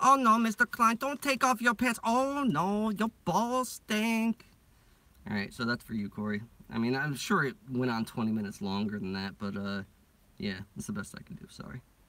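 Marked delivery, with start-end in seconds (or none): 0.0-4.5 very high, loud, drawn-out woman's voice. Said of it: "just be like".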